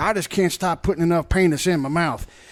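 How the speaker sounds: playful mock Texas accent. Recalling a night out drinking, doing their texas accents: put-on texas accent. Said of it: "we were doing our Texas accent".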